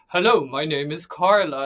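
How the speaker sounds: deliberately deep, loud, put-on man's voice. Speaker showing the voice she uses at conferences: going deep, like a guy. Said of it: "Like I really go deep".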